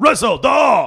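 acted, shrill, very high, angry raging yell. Recalling French immersion teachers sending students outside, imitating an angry teacher. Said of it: "Like there was an anger to it. There was like a rage".

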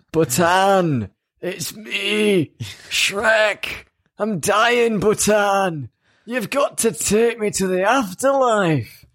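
bad ogre voice pitched way up high. Chatting about ogres with two others, doing a bad Shrek impression. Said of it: "I'll stop that now. It's painful. My voice".

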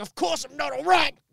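very high, grating, rough angry voice. Retelling a reply from an old man at a crash: imitating an angry man. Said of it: "he was really angry at me".

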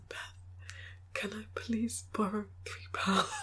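soft, hushed, barely voiced whisper. Retelling asking to borrow money to pay a bill: retelling a whisper. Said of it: "and I whispered".

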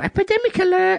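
very high-pitched northern receptionist voice. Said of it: "the receptionist voice".

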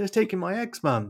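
put-on high, tearful crying wail. Describing a funny poem's last line, the speaker voices the woman: imitating crying to mum. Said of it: "She's crying to her mum on the phone".

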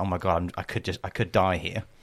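acted scared, almost in tears. Retelling a panicked drive to a&e, the speaker voices past thoughts, retelling being almost in tears. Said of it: "I'm like almost crying".

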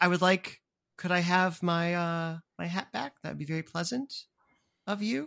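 very kind, endearing voice. Voicing a character in the group's scene, very endearing and kind. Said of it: "very endearing and very".

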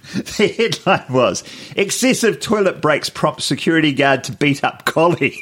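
giggling, laughing through the words. Host reads a news headline aloud to the other host: laughing while reading. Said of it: "sorry i can't stop laughing".

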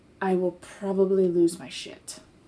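speaking in a whisper. Speaking in character to another character so others can't hear: whispering. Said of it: "you're still whispering it".

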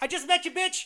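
high, yelled-out heckling tone. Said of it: "So I yelled out".

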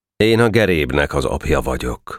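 ordinary delivery

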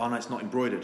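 plain

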